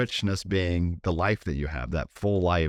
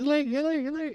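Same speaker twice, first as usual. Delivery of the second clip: put-on alarm sound, much higher pitch. Describing her panic about being late, imitating the alarm in her head. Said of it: "the alarm in my head is just going off".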